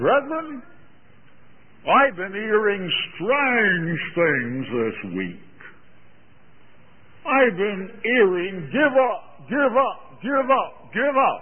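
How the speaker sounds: put-on high, slow English accent.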